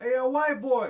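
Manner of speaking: high, loud yell. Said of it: "this guy starts yelling out".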